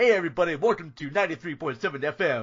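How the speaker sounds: on-air radio station announcer patter. Imitating how radio hosts talk: imitating fast-talking radio DJ. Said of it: "this, like, fast talk".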